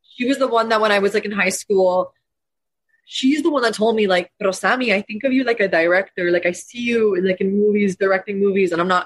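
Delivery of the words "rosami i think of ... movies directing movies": put-on Latin American-sounding accent. Quoting what her mom told her in high school; latin mom accent. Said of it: "this is my mom's accent. She's Latin".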